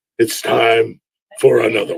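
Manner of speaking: low, slow, very deep voice.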